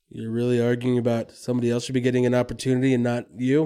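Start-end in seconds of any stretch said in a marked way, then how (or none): none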